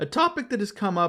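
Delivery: voice cracking mid-phrase. Introducing a topic that keeps coming up on the show: voice cracking. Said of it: "why is my voice cracking?".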